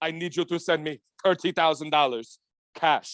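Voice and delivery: put-on Middle Eastern accent. Retelling a rich scammer's call asking a favor: imitating a Middle Eastern accent. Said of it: "the Middle Eastern accent when there's, like, a fucking bad guy".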